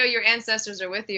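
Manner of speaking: ordinary delivery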